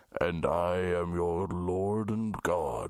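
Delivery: very deep, slow voice. Imagining the voice riders hear on a Jesus space ride: deep voice. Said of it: "While you hear a deep voice say".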